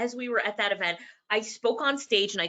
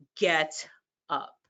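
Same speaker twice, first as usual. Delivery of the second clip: deep, low, dropped voice; 5 semitones lower than usual. Retelling the last time a caller repeated the words: deep Les Brown voice. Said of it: "in that deep Les Brown voice".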